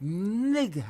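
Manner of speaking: "nigga" with tongue to palate. Imitating how he says the word: imitating his accent. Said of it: "with his accent".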